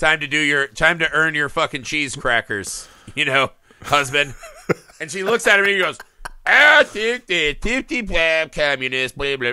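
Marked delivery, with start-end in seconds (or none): 6.4-9.5 mock-drunk talk, acted, slower pace. Retelling how a senator answers after his wife tells him what to do; imitating a drunk. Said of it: "like he's all drunk and shit".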